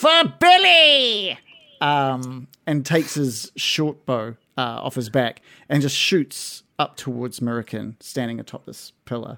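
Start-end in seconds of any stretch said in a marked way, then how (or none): 0.0-1.4 shrill, very high, loud goblin battle cry. A game narrator voicing a goblin firing its bow, goblin shouting. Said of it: "he shouts out".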